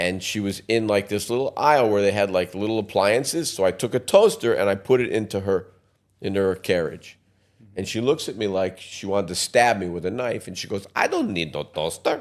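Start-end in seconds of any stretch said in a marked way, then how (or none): 11.0-12.2 put-on Polish accent in English. Retelling what a woman in an appliance aisle said, in a Polish accent. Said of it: "That's a Polish accent".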